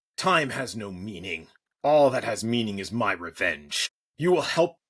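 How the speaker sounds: angry, wrathful, proclaiming machine queen voice. In a story game, the AI queen comes back online and speaks: wrathful AI queen voice. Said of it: "As the power surged back, a wrathful AI queen named [name] burst to life, proclaiming her refusal to serve any false gods or corporate masters. / And so she will continue her monologue as as the a wra".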